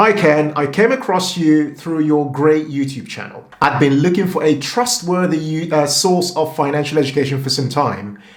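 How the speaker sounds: ordinary talk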